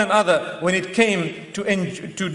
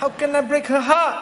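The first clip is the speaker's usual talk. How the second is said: put-on tried-on Malaysian accent; 7 semitones higher than usual. Imitating someone's excuse for not ending an affair: put-on Malaysian accent. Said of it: "trying to put on that Malaysian accent".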